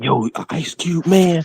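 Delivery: very slow, high, secretive whisper. Retelling what classmates said in high school: imitating a whisper. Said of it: "like a whispered".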